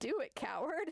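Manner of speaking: mock taunting with laughter through the words. Retelling a story scene, a character laughing in their face. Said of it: "fucking laughs in their face and says".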